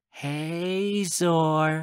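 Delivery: dreamlike voice with hey stretched long. Reading a story where a character greets someone: dreamlike voice. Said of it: "Pepper says in a dreamlike voice".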